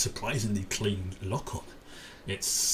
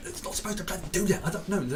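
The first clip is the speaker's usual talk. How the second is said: put-on panicked voice, higher pitch; 9 semitones higher than usual. Describing what can be heard in the background: imitating Vez and Ven panicking. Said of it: "panicking and going".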